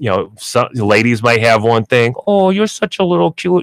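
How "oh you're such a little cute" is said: sweet, soothing, comforting cutesy voice, high pitched. Explaining dog training, showing how some ladies talk to their dogs: comforting cutesy voice. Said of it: "that voice is is comforting to them".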